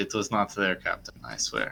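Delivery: grave, sincere, very serious, earnest tone. Voicing a crew member assuring the Captain: very serious. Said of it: "he just very seriously".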